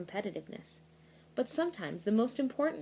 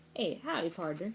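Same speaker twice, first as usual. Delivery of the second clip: put-on cowboy accent and voice; 2 semitones lower than usual. Reading a children's book, showing how to say pardner, saying it like a cowboy. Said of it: "you're supposed to say it like a cowboy".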